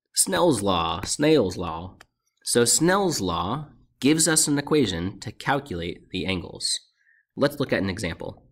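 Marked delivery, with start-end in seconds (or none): 0.2-2.0 Southern US accent on the words. Explaining Snell's law in a video, showing how it sounds in a Southern accent. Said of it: "Snell's law with a Southern accent".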